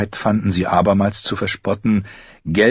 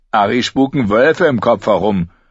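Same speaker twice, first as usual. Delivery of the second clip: mocking, contemptuous, scornful sneering; 3 dB louder than usual. Reading a companion mocking a girl who says she heard a wolf, sneering. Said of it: "höhnte Lommi".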